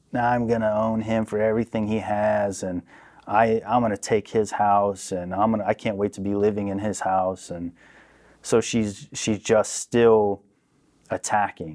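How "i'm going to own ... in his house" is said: usual speaking voice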